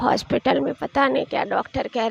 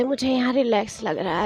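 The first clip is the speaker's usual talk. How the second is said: plain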